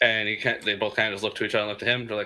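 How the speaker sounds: normal talking voice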